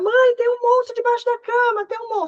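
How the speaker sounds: put-on very high, frightened, crying child voice.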